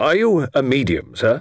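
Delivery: insistent, wary, doubtful, demanding tone. Colonel Monkton questioning Mr. Quinn, demanding doubtfully. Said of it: "Demanded Colonel Monkton, eyeing Mr. Quinn doubtfully".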